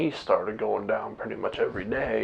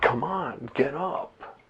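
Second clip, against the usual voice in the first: very slow, stretched-out, drawn-out delivery; 4 semitones higher than usual. Retelling urging a grandma to get up the steps: retelling own yell. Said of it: "So I was yelling at her".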